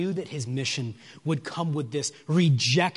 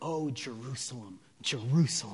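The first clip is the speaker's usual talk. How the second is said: put-on mournful, grieving lament full of anguish; 2 semitones lower, 6 dB quieter than usual. Recreating the emotion heard in a man's voice, acting out anguished grief. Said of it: "I'm doing a pitiful job of trying to recreate that emotion, but do you hear that in his voice?".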